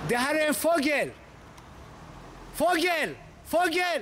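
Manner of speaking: put-on man's voice. Comparing two men, the speaker quotes one of them: retelling a man's words. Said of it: "han som säger".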